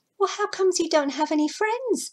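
high-pitched, astonished and wondering. Asking a snug why it has no friends, surprised. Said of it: "said Imbu in surprise".

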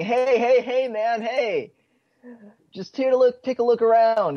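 slow, loud, drawn-out high yell. Player voicing their character as two figures catch them, yelling. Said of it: "is what I'm trying to yell anyway".

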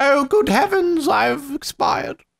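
put-on British accent, very high and drawn-out. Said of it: "it was the British way of".

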